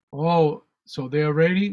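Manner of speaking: ordinary delivery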